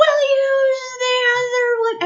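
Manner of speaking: very high, slurred, zombie-like sleep-talk shout. Retelling how he screamed it again while asleep, imitating slurred sleep-talk. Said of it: "because it's slurry".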